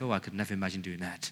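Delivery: put-on self-righteous muttering. Describing how we judge others, the speaker voices our mock self-righteous mutter. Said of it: "thinking under our self-righteous breath".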